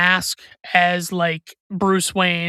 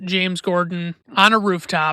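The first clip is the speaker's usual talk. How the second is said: usual speaking voice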